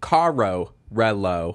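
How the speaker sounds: American accent on the Spanish words carro and relo. Showing how the speaker says spanish words: american accent on spanish words. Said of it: "Like it just sounds so American".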